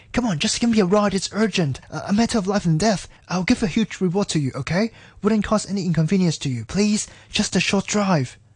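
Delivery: babbling on and on. A stranded man begs a driver for a ride: babbling. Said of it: "The man babbled".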